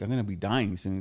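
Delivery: ordinary talk, nothing marked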